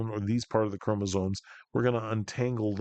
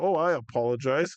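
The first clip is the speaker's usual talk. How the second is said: put-on apologetic chatbot voice, pitched higher; 4 semitones higher, 3 dB louder than usual. Acting out a chat about buggy code: imitating ChatGPT. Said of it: "it's like talking to Chat G P T".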